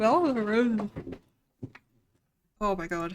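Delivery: speaking through a yawn. Placing roses in a stylus game, yawning while speaking. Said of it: "Sorry I keep yawning".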